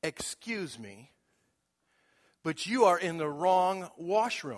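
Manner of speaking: haughty, disapproving, judgmental, condescending woman's voice. Retelling what a woman said to him in the washroom, mock-condescending woman's voice. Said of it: "this judgmental, condescending voice".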